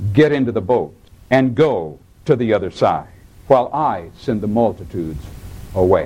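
stern, low delivery.

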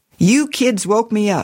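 ordinary talk, nothing marked

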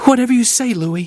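meek, timid, very high-pitched voice. A woman answers the man who shouted at her, timidly. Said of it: "she said timidly".

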